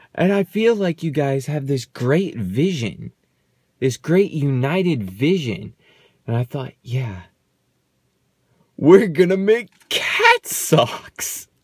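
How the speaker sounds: fighting back laughter under the words throughout. Speaker retells what he said at a prayer session, holding back laughter. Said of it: "I'm trying not to laugh here".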